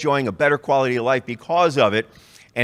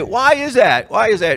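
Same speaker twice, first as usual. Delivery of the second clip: high, screaming, demanding tone; 8 semitones higher, 4 dB louder than usual. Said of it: "she started screaming at the ch-, at the clerk".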